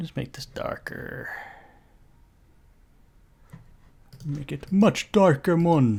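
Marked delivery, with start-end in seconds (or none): 4.3-6.0 horrible put-on Jamaican accent. Walking viewers through darkening an image, the speaker uses a horrible Jamaican accent. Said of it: "Doing my Jamaican accent, my horrible Jamaican accent".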